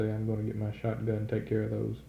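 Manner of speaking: ordinary delivery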